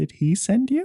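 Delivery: very small, tiny, very high-pitched little peep. Among a panicked group, someone asks a question in a very small voice. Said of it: "in a very small voice will go".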